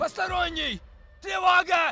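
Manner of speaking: shouting. In a game scene, a character yelling in a foreign language. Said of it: "Yelling in foreign".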